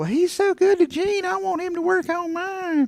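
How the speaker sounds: shrill, very high-pitched nagging voice. Retelling what the mother said about the surgeon: imitating a nagging mother voice. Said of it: "the nagging mother voice in my head".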